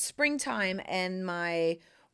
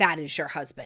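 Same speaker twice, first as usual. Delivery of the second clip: put-on very serious, solemn voice, lower; 5 semitones lower than usual. Retelling the inner voice about meeting a husband, imitating a very serious inner voice. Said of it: "it was very serious".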